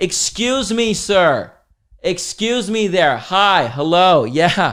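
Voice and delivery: pushy, entitled, obnoxious, drawn-out put-on voice. Speaker retells someone on a quiet plane calling the male flight attendant, imitating a loud obnoxious voice. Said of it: "like so loudly and obnoxiously".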